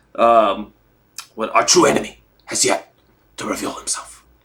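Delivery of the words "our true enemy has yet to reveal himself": breathy, near-whispered delivery. Quoting Godfather Three lines after chat mentions Pacino: Al Pacino impression. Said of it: "Bob impression sounds like Pacino in Godfather Three".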